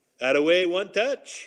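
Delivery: put-on French-accented English. Recalling what Benoit Hogue said at practice after his goal: Benoit Hogue's French accent. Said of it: "I hear Benoit Hogue in his French accent".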